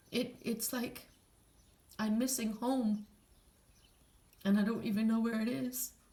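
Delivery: very emotional, halting speech with long pauses. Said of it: "I'm getting very emotional right now".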